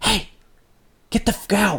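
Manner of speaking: high, hushed whisper under the breath. Retelling what a friend's phone recorded while he kept filming, retelling a whisper. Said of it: "But he's whispering it".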